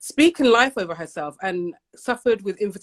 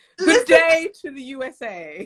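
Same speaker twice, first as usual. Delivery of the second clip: put-on regal, posh, queen-like, sing-song British accent; 7 semitones higher than usual. Greeting an audience of women, in a put-on british queen-like accent. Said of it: "My most British queen-like accent".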